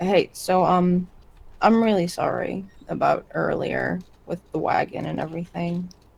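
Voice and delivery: hushed, barely-there, super quiet, slow voice. Voicing a character apologizing for the wagon: super quiet voice. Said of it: "saying it, like, super quiet".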